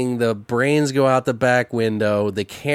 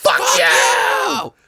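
raw, rough, creaky scream, acted out; 13 semitones higher, 4 dB louder than usual. Retelling how she reacted, imitating her screaming. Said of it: "And she's like screaming".

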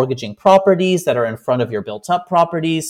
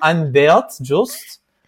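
imitated Swiss accent. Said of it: "he had the accent".

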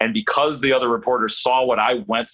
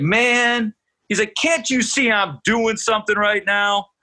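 yelling, pitched very high; 10 semitones higher than usual. Retelling asking Barry if he's playing today while he lifts weights: imitating Barry yelling. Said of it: "and he yells".

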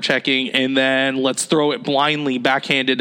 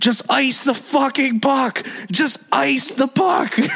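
very high, drawn-out near-scream yell; 11 semitones higher than usual. Retelling watching a hockey game at home: imitating screaming at the tv. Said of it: "I'm practically screaming at the T V".

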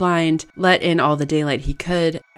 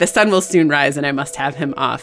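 ordinary delivery

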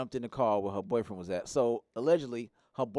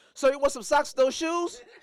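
very high, loud, carrying call-out; 7 dB louder than usual. Retelling catching a man stealing shoes, retelling a loud call-out. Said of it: "I made it real loud to embarrass him".

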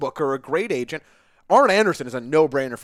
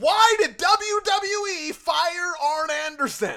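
loud, very high, slow, drawn-out reading; 13 semitones higher than usual. Reading out a listener's question written in all caps: reading a question loudly. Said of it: "I suppose I have to say it somewhat loudly".

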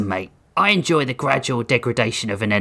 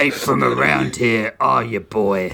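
gruff, rough, creaky growl. A narrator reads a barkeep's answer to a customer asking for a wine list, growling. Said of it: "The barkeep growled".

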